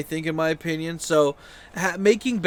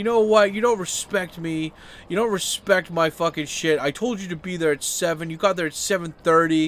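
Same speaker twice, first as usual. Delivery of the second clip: put-on high, loud, drunken-sounding ranting. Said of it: "starts being a dick".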